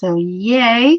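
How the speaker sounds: sarcastic, loud, drawn-out ironic cheer. Reporting having just started a new chapter and scene: sarcastic. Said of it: "with sarcasm".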